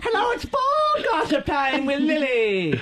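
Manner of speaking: very high, swooping sing-song voice, one word stretched out. Joking around with friends, greeting listeners: Julia Child voice. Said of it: "I'm Lily Julia Child".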